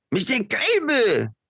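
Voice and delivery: loud, very high, put-on French accent. Passing the baton to the next speaker, calling out in a French accent. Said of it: "That was my French accent".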